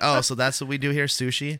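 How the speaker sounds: mock deflated, unimpressed, disappointed, let-down voice. Retelling a comedian's reaction to the sushi menu: imitating a disappointed tone. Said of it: "looked very disappointed when he was just like".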